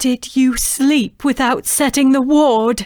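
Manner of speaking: stern, insistent, loud, high, demanding tone. A mother questions her daughter, demanding. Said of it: "balancing on her warrior's arm. / [name] stared back at her mother, / [name] demanded".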